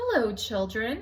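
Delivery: sugary-sweet, gentle voice. Reading a story, Miss Nelson greets the children: sweet voice. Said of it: "someone said in a sweet voice".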